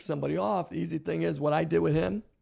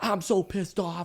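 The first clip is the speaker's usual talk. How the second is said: put-on angry, gloomy preacher voice; 2 semitones higher than usual. Voicing a pastor's private thoughts about a small service: imitating an angry, depressed pastor. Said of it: "So depressed".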